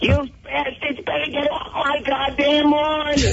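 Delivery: put-on very high, crazy voice with full New York accent. Asked for a little taste of how she sounds, answer in an Aunt Chippy voice. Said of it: "What does she sound like, Jimmy? Give us a little taste".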